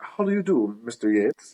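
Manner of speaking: playful, put-on London English accent. Imitating his ex-wife playing around in a playful london accent. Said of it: "she always did this like London England accent playing around".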